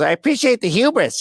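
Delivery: very high-pitched, nerdy voice. Retelling what Richard Sawinski's son said to them, nerdy voice. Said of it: "He had like a nerdy voice".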